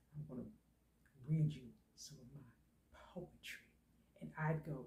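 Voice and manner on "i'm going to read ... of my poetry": hushed, deep, very quiet put-on man's voice. Describing an imagined man in a fantasy, the speaker imitates his deep voice. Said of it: "He had a deep voice".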